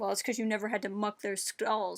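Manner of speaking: sour, grudging, bitter, resentful tone. Showing how he could have said the line, bitter, resentful tone. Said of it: "he could have said this in a bitter way".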